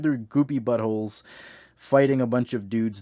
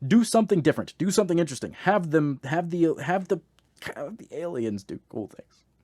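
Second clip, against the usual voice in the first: normal talking voice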